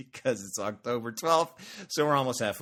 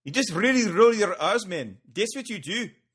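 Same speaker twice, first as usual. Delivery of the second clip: very high, put-on South African accent; 9 semitones higher, 4 dB louder than usual. Explaining to a co-host how to do an accent, in a south african accent. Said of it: "That's my uh, South African".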